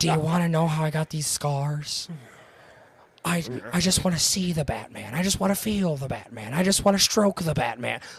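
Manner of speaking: mocking whisper with lisp. Mocking a Joker voice he finds unintimidating, in a whispery lisping Heath Ledger's Joker voice. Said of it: "trying to whisper and trying to talk with a little bit".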